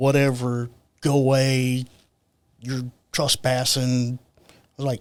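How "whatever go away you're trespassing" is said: normal talking voice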